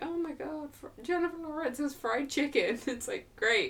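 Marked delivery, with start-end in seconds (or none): 0.0-2.8 much higher, gushing gossipy voice. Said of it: "and everyone was like".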